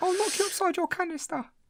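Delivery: very high-pitched, menacing put-on voice. Doing a comic impression after the other speaker mentions it: high-pitched Danny Dyer impression. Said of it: "you do high pitched Danny Dyer".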